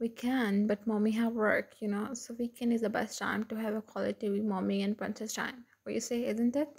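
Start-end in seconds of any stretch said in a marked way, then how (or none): none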